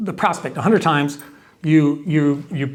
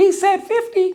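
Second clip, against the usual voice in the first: fake, very high-pitched girly voice. Retelling a client's dispute, voicing the person the client asks, in a put-on girl voice. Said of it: "How you like my girl voice?".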